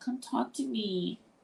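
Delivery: high, drawn-out, whiny pleading voice. Asking viewers to come back online and talk, whining voice. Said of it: "I'm using my whining voice now".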